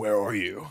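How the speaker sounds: low, eerie, demonic voice. Retelling a man calling the speaker on the phone, imitating a demonic voice. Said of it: "he calls me in like in like a demonic voice".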